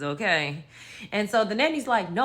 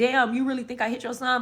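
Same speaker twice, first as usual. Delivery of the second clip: tearful, wounded voice, crying out the words; 5 semitones higher than usual. Retelling a nanny accused of hitting a child: imitating someone in tears. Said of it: "she's in tears because she's like".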